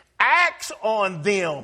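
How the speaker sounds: "acts on them" stressed and stretched slow.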